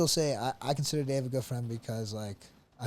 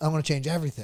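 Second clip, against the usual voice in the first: put-on sarcastic tone, pitched higher; 3 semitones higher, 4 dB louder than usual. Retelling what a wrestler said after losing: imitating Frank Molinaro being sarcastic. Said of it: "And he's being sarcastic".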